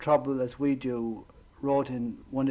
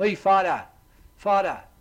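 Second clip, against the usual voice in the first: put-on loud New York accent; 6 semitones higher, 5 dB louder than usual. Retelling how a boy at church always greeted him, in a new york accent. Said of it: "with his kind of New York accent".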